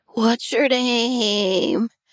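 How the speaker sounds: spooky, eerie, drawn-out ghost voice. Suggesting how a ghost would ask someone's name, in a ghost voice. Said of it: "ghost voice".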